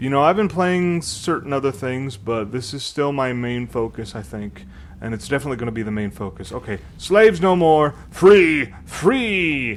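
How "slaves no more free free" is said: loud, very slow, high-pitched giant voice, "free" stretched. Playing Warcraft and voicing the game's dialogue aloud, in a giant voice. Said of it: "that probably didn't sound like a very good giant".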